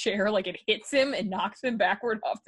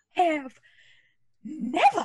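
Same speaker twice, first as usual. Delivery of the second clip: high, put-on, scandalized Southern accent; 6 semitones higher than usual. Acting surprised as a joke after being told to: Southern accent. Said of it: "I don't know why I went Southern".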